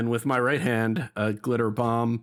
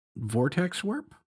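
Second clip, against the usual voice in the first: normal talking voice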